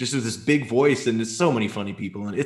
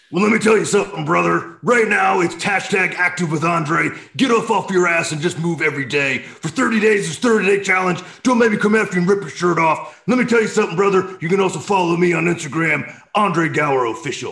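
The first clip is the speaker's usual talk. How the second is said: loud, pitched-up yelling in a wrestling-promo style; 7 semitones higher, 5 dB louder than usual. Taking his turn in the game, the speaker launches into a Hulk Hogan impression. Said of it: "So that was my Dietrich Bader, Hulk Hogan".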